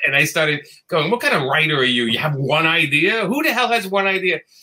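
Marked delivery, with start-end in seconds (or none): 1.1-4.4 acted, angry, exasperated, berating yelling tirade. Retelling a midnight call to a writer friend, acting out own yelling. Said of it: "I started yelling at him".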